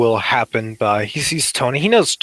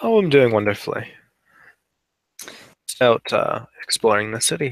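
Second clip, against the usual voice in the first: plain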